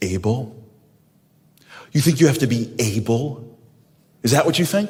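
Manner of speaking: mock upset, cross, challenging tone. Retelling a father's reply to his eleven-year-old son: imitating an upset father. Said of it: "my father got upset at me".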